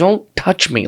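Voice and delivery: irritated, annoyed, fed-up tone. Retelling a reply to a girl who kept touching their back: imitating own annoyed reply. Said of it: "I was just annoyed".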